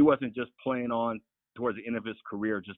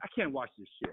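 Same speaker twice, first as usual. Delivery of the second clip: play-acted fed-up, breathy half-whisper under the breath; 4 semitones higher, 8 dB quieter than usual. Recalling watching a game with friends and wife: retelling a frustrated outburst. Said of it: "I get so frustrated".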